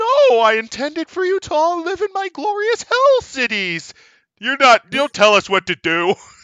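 flamboyant falsetto, loud, shrill, grand and swooping. Explaining why people live in the wild, the speaker voices Satanis: flamboyant falsetto Satanis voice. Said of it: "It was like a flamboyant voice with a bit of a reverb. Yeah, it was a bit of a reverb and just kind of like a falsetto voice".

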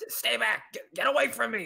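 high creature scream. Voicing a griffin that only one listener can hear, griffin screaming. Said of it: "The griffin kind of screams".

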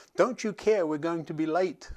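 put-on urgent yelling, somewhat toned down. Retelling what a friend said: imitating someone yelling. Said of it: "my friend yelling".

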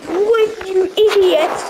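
very high, furious, angry snapping outburst. Losing progress in a game because of a spider, angry outburst. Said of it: "This is really annoying".

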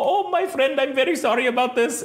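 put-on Indian accent, pitched very high. Retelling a phone call with a credit card agent: imitating an Indian accent. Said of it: "she sounds like she's in fucking India".

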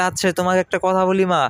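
ordinary delivery, nothing marked

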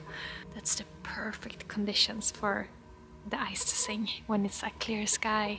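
soft whispering.

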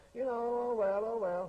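nonchalant, unbothered tone. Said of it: "if you just nonchalant and say".

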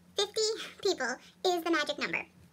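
super fast, sped-up chipmunk-style voice. Repeating a point to the audience for emphasis, in a super fast chipmunk voice. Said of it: "Let me say it again in super fast chipmunk voice".

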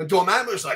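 ordinary delivery

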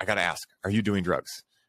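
plain

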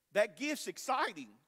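voice cracking and breaking mid-line. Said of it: "My voice just cracked".

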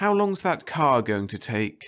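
weary, worn-out tone, a touch high. A woman waiting at a counter asks how long the car will take, in a tired voice. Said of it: "She asked in a tired voice".

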